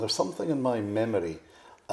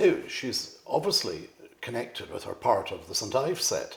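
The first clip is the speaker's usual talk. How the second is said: normal talking voice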